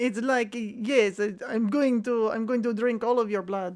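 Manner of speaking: put-on vampire voice with an Eastern European accent. Doing silly voices for fun, the speaker tries a vampire voice, eastern european. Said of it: "getting kind of like Eastern European in there too".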